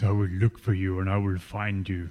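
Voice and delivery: put-on scary, menacing, threatening movie-villain tone. Repeating a line listeners will recognize: put-on scary voice. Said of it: "Scary voice".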